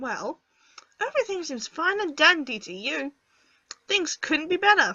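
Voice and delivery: cheeky, sassy, back-talking tone. After Granddad's death, a young lady talks back to a relative in a sassy tone. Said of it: "I don't like your tone".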